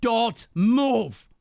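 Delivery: loud screaming. A player's archer, bow still raised, screams at the raider in blue: screaming. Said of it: "I'm just screaming".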